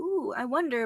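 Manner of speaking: plain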